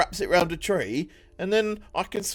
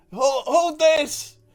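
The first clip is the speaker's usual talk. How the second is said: high, loud shouting over loud background noise; 9 semitones higher than usual. Shouting to a big creature while throwing him a rope: shouting over the cicadas. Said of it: "trying to, like, shout over the cicadas".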